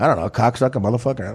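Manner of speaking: put-on dead-serious delivery. Where most people try to be goofy, act out De Niro's line, imitating De Niro dead serious. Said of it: "De Niro, dead serious, goes".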